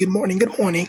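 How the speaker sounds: high, polite voice.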